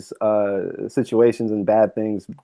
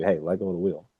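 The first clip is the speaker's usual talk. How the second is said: soft, hushed stage half-whisper close to the ear; 3 semitones lower, 9 dB quieter than usual. Acting out a voice urging you to let go: acting out a half-whisper. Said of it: "someone whispers to you".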